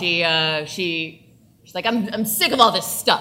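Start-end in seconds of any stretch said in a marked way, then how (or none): 1.9-3.2 loud, high-pitched, barking voice. Showing how the game character Battery talks: barking commanding Battery voice. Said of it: "She talks like this".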